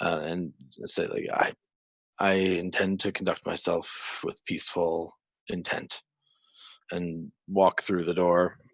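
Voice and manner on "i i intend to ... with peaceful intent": quiet whisper under the breath. Voicing a character entering a longhouse, praying: whispered quiet prayer. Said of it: "he'll whisper".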